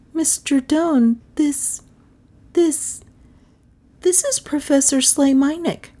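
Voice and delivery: small stunned voice, very high-pitched. A speaker introduces the professor to a man; small, stunned voice. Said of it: "in a small, stunned voice".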